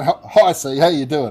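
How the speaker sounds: cheery, jovial, friendly tone. Showing how the word sounds when said in a jovial way: jovial greeting. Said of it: "if we say it in a jovial way".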